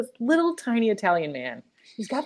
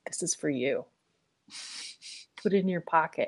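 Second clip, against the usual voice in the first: acted, dead-serious, hushed whisper; 4 semitones lower, 8 dB quieter than usual. Retelling a man who slid a note through the hole, mock-serious. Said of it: "and he's like real serious".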